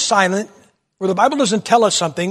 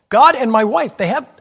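ordinary talk, nothing marked

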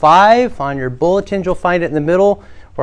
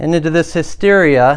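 ordinary talk, nothing marked

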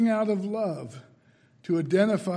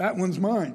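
plain

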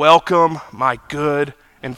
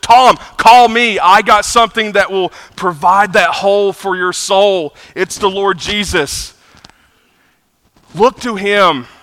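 loud, raised, pitched-up screaming; 5 semitones higher, 6 dB louder than usual. Recalling screaming at the television to Tom: retelling screaming at the TV. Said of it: "I'm screaming at the television".

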